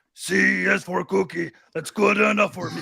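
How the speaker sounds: rasping puppet-monster voice. Doing Muppet impressions, naming each first: Cookie Monster voice. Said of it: "Cookie Monster".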